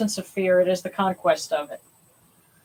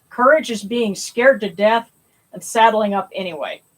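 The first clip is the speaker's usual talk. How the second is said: usual speaking voice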